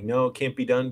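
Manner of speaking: ordinary delivery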